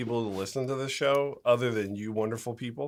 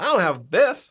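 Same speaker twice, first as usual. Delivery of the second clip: high, loud cartoon voice with Canadian accent; 7 semitones higher, 6 dB louder than usual. Talking about regretted purchases, voicing the buyer's thought in a Terrence and Phillip voice. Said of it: "I don't know why I'm doing that voice".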